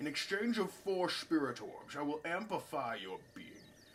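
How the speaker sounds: put-on hushed old man voice. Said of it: "I'm gonna do this in the old man's voice".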